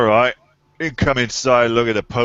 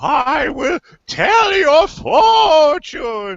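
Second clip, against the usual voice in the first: put-on very high, swooping, hokey old woman fortune-teller voice; 4 dB louder than usual. Mocking someone's culturally insensitive bit, in a hokey old woman voice. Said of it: "this really hokey old woman voice".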